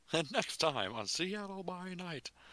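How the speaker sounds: vintage radio announcer voice. Announcing the next episode at session end: old-timey radio announcer voice. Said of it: "lean into the oldie times announcer voice via radio".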